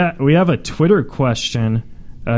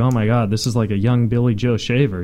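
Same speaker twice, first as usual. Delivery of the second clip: normal talking voice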